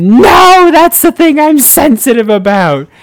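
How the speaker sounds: very loud, very high, shrill shriek. Re-enacting turning around to answer the two girls behind him, retelling a scream. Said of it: "turned around and screamed".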